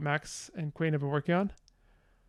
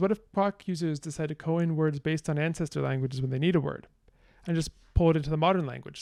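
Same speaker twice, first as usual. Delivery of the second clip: plain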